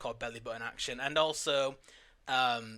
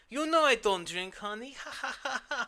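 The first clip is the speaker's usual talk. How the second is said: very high-pitched voice with a ha-ha chuckle; 11 semitones higher, 3 dB louder than usual. Acting out a movie line refusing a drink: Tommy Wiseau impression. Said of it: "my, um, Tommy Wiseau impression".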